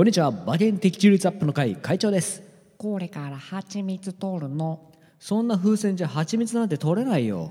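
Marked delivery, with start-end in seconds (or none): 2.8-4.9 cute, soft, slow storybook cartoon bear voice. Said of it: "熊野プーさんのモノマネをしてみました".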